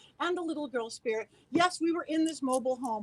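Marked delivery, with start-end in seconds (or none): none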